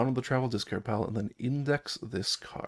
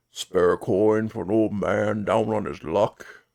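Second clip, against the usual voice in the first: put-on deep, low-toned old roadside beggar voice; 3 semitones lower, 7 dB louder than usual. Game master voices an old one-eyed beggar by the road: deep old beggar voice. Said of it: "his quirk are a deep voice".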